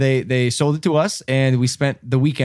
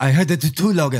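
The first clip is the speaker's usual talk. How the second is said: speaking in a put-on German accent. Retelling a night a car horn woke them, quoting David in his German accent. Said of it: "That's his German accent".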